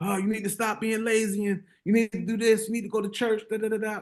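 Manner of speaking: mock high, pumped-up motivational yelling. Recounting a viral guy who runs up to the camera: imitating Wallow yelling. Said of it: "he yelling at the camera".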